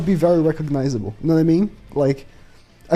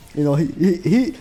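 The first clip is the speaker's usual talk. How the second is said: ordinary talk, nothing marked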